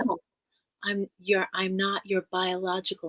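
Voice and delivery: ordinary delivery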